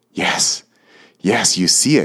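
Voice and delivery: eager, excited, animated exclamation, slow. Narrator reads a character showing an image to another, excited exclamation. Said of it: "Exclaimed Homnith, excited and animated once more".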